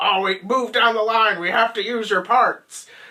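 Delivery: loud high yell.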